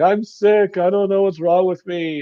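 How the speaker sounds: high-pitched, tearful, sobbing, falling apart. Retelling a caught man's words as he breaks down: imitating someone crying. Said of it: "starts breaking down and crying".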